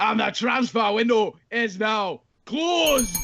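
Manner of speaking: slight Scottish accent, slow. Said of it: "with a slight Scottish accent".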